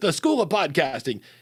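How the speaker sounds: pushy, forceful radio announcer voice. Describing an ad-reading voice option, imitating a forceful announcer guy. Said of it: "just announcer guy who's very forceful and he's talking like this".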